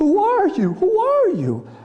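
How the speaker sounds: mock-terrified voice. Describing a film scene, the speaker voices the caught burglar acting out utter terror. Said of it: "he's just in utter terror".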